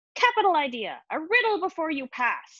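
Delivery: high, eerie, spooky voice with a cackle. A voice speaks to the narrator climbing a ladder behind Ginger, cackling. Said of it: "The voice continued with a cackle".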